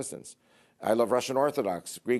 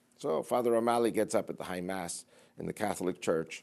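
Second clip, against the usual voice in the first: ordinary delivery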